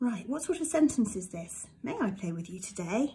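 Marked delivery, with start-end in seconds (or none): 1.8-3.1 voice rising at the end on "today". Lesson on sentence types: rising pitch at the end. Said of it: "Did you hear my voice go up at the end?".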